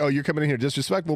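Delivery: ordinary delivery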